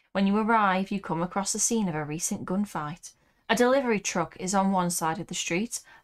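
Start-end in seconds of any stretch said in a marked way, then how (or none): none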